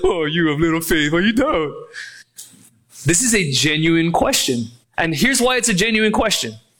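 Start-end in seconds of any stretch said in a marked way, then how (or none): 0.0-1.7 condescending, patronizing, lower pitch. The speaker demonstrates how readers often hear Jesus' words, in a condescending tone. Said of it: "read like a condescending tone into this".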